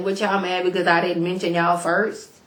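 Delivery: ordinary delivery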